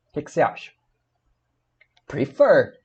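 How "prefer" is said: prefer said pre-FER, last syllable stressed. Teaching verb stress in Portuguese, stress on fer in prefer. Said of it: "essa última sílaba aqui, ela é a tônica".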